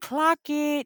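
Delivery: mock shriek, very high pitched, screamed. Retelling a reaction while watching the show: imitating own past scream. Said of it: "I screamed at the T V and I was like".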